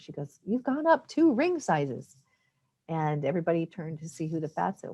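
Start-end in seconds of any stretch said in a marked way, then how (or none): 0.4-2.1 high, swooping, announcing shout. Retelling what the store clerk shouted to the whole store: imitating a clerk shouting. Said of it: "she shouted out to the whole store".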